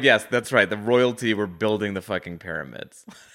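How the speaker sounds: usual speaking voice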